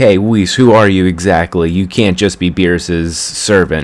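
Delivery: ordinary delivery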